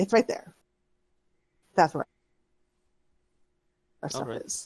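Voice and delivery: reluctant, begrudging whine, get-it-over-with tone. Voicing a character pointing out where the stuff is: begrudging, get-it-over-with voice. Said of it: ""Can we get this over with?" type of, you know, voice".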